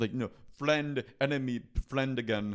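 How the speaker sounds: put-on Indian accent. Speaker sums up a TV show's plot to the others, in a put-on Indian accent. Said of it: "Watch that accent".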